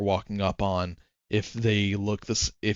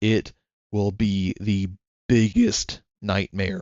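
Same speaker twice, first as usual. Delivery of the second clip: voice breaking and cracking partway through. Speaker's voice cracks mid-sentence, before stopping for water; voice cracking. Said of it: "Voice crack".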